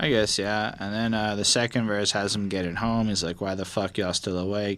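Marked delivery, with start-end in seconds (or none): none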